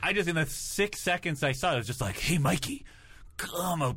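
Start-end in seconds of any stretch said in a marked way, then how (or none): 2.2-4.0 creepy, strained voice, every word forced out. Recalling how a cartoon turtle was voiced, doing his line: imitating Raph's strained voice. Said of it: "he just sounded like he was, like, straining himself all the time".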